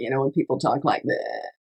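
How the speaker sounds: quiet, affected, creaky vocal fry. Speaker calls whining an affectation and demonstrates vocal fry. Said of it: "It's like that vocal fry".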